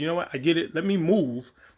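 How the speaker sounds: usual speaking voice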